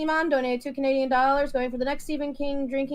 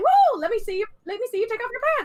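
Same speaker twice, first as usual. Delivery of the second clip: sing-song, squeaky, high, swooping cartoon mouse voice; 9 semitones higher than usual. Speaker retells a man's joking line, done in Mickey Mouse voice. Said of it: "He said a funny sexy line in Mickey Mouse voice".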